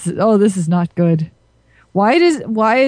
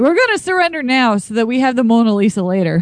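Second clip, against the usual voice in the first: usual speaking voice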